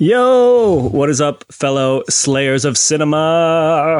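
very slow, hyped, enthusiastic, long drawn-out "yo". Greeting the podcast listeners as the special guest: enthusiastic greeting. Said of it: "one of the more enthusiastic ones".

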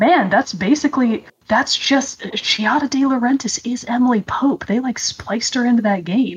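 ordinary talk

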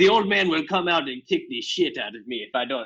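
put-on talking goat character voice. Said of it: "He sounds like Cheech Marin a little bit".

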